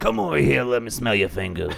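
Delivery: creepy, sing-song put-on Cajun accent. Speaker imitates a man with a Cajun accent who scares him, in a creepy Cajun accent. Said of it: "that creepy Cajun accent".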